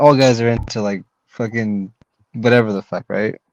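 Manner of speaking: ordinary delivery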